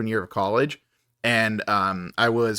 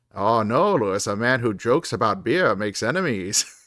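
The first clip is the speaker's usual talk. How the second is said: fake elderly Maine accent. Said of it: "I always imagine him talking like Fred Gwynn".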